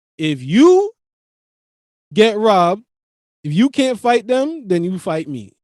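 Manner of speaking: mock dead-calm, matter-of-fact, extremely calm. Retelling a father's words to a crying child: imitating someone speaking extremely calmly. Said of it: "extremely calmly".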